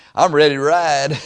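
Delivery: put-on West Texas accent. Quoting a man's reply to the speaker, in a west texas accent. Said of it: "in that West Texas accent".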